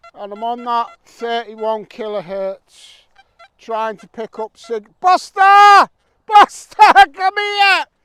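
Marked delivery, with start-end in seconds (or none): 5.0-7.8 shrill, booming, very loud high-pitched shout. Filming for viewers, the speaker calls over the one who ruined a shot, shouting. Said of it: "Sorry for shouting".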